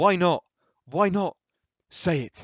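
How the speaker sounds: put-on eager, young-sounding, very loud, excited pleading tone. Alan calls from his bed to his mother, in an excited younger voice. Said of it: "in an excited younger voice".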